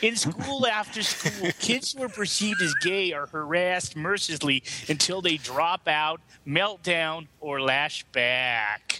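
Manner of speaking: horrible put-on Minnesota accent, back vowels drawn out. Reading out a quoted passage about a school district, in a horrible Minnesota accent. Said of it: "It's a horrible, horrible Minnesota accent".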